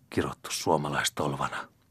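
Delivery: mumbled under breath. The agent, just thrown out the door and rubbing his back, muttered. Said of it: "mutisi asiamies hieroi selkäänsä".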